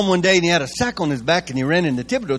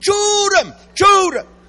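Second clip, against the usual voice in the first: mock very high, loud, shrill screaming, repeated; 14 semitones higher, 5 dB louder than usual. Telling the audience about his wife, imitating her screaming. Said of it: "my wife starts screaming".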